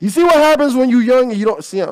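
shouting straight into the mic. Ranting into the mic during a story, yelling. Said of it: "I'm yelling".

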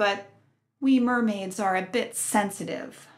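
ordinary delivery

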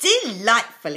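a single word exclaimed loudly. The dragon answers a suggested place for a dragon, exclaiming. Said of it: "exclaimed the dragon".

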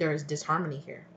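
ordinary talk

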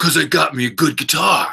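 high, laid-back surfer dude voice. Quoting a fifty-year-old man who wants to record his first album, surfer dude voice. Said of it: "he talked like a surfer dude".

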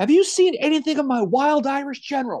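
shrill, high-pitched, loud hollering shout. Retelling a general calling out for another officer: retelling a loud yell. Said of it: "he yells as loud as anybody could hear".

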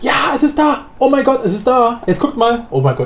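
bubbling-over excitement, high and swooping pitch. Streamer reacting as the awaited event finally appears, so excited. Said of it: "ich bin so aufgeregt".

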